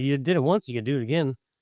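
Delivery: plain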